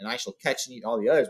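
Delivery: ordinary delivery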